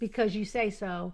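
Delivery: plain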